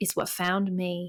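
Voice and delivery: put-on line in a Southern accent. Quoting what a woman says, in a southern accent. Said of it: "I guess I should say this in a Southern accent".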